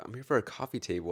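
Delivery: put-on, very polite, courteous, best-behaved tone. Retelling knocking at a stranger's door for a table: imitating own polite voice. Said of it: "trying to talk very politely".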